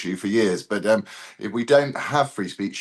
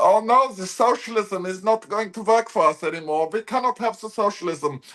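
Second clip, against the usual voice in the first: put-on very high-pitched blubbering, sobbing wail; 11 semitones higher than usual. Retelling how the head of the security conference burst into tears: imitating someone crying. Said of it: "He burst into tears, going".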